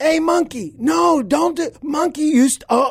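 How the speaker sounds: put-on stammering yell, cutting out, very high. Retelling a soldier yelling at a monkey near grenades: imitating Laz yelling. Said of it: "I hear him yelling".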